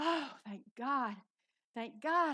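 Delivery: slow, loud, drawn-out sigh of overwhelming relief. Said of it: "almost passed out with relief".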